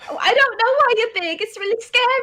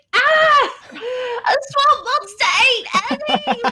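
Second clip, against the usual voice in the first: fake-startled, panicked, alarmed outburst; 3 semitones higher than usual. A speaker imagines Twinkle's reaction to a muck-covered Ellie; Twinkle voice, put-on alarmed cry. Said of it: "Twinkle's gonna be like".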